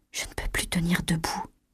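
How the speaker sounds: barely audible, very soft, breathy whispered murmur. A woman struggling to get to her feet speaks, murmured. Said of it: "murmura Chloé".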